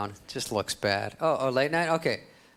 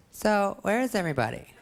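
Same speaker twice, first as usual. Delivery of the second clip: put-on pitched-up voice of a high-school girl; 7 semitones higher than usual. Speaker does an impression of a girl invited to a party at their house. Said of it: "Here's my impression of a girl in high school".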